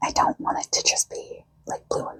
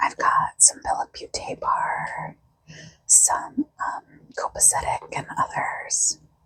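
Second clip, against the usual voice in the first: voiceless whisper throughout, voice gone. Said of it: "I'm actually whispering today because I have a cold".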